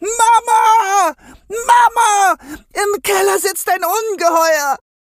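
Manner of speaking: very high, loud, drawn-out shriek. Lisa running up the cellar stairs, calling to her mother, screaming while running. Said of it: "rannte schreiend durch den Kellerflur".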